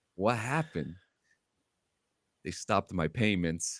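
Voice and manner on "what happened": put-on whisper, lower. Retelling what he asked a man who started laughing, retelling a whisper. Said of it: "And I whispered at him".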